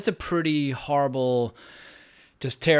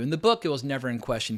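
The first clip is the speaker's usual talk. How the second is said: normal talking voice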